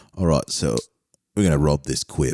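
put-on English accent.

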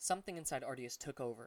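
ordinary delivery

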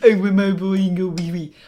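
fake put-on French accent. Speaker imitates a little kid trying to be French, in a kid's fake French accent. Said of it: "Just a little kid trying to be French".

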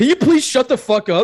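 put-on, shrill, very high-pitched shout. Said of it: "He yelled at this drunk girl".

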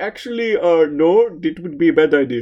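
put-on Indian accent. Quoting an intern who rejects an idea: Indian accent. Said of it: "That is Indian accent".

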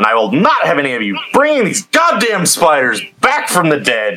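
furious, enraged, high swooping warrior voice. Speaking in character to an enemy druid after crushing him: furious in-character line. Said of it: "Rogthor is fucking pissed right now".

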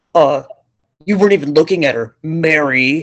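mocking, imitated put-on voice. Retelling what the husband said about the dog: mocking husband's voice. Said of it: "I've been mocking his voice".

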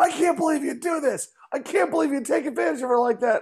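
very high, furious, angry scolding yell. Speaker retells their angry wife yelling at them, imitating wife yelling. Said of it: "she's yelling at me like".

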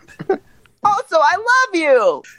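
very high pitch, slow, swooping. Repeating a joke line in a silly voice: Donald Duck voice. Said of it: "That's very nice, Donald".

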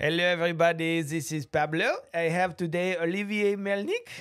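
terrible, bad put-on French accent. Opening the show and introducing the guest: terrible french accent imitation. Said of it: "my imitation of a Frenchman".

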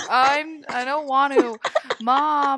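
high, very slow, drawn-out mopey whine. Describing how someone talks before coffee, the speaker imitates Marina's dragging voice. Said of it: "her voice drags on".

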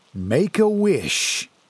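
on-air radio announcer voice. Reading fiction aloud, voicing the other man walking alongside: radio announcer voice. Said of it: "voice like a radio announcer".

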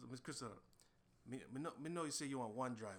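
put-on man speaking with a Jamaican accent. Imitating the driver greeting them on arrival: imitating the driver's Jamaican accent. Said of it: "can I do how he did it".

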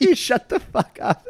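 high-pitched, slow, mock annoyed tone. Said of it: "you're like".

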